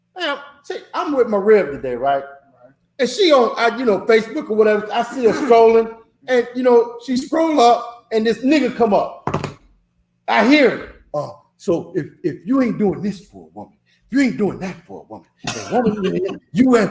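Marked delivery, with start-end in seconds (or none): 11.2-16.9 low, honeyed, sweet-spoken smooth talk.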